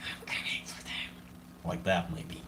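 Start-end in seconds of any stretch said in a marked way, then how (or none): 0.0-1.1 very quiet, hissing, menacing whisper. Narrating a scary phone-call story, trying the caller's line in a hissing voice. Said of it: "how do you say in a hissing way".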